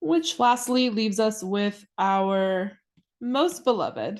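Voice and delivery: heavy sarcasm, slow and stretched long. A chemist explaining solution units introduces molality; sarcastic. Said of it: "I hope you can hear the sarcasm in my voice".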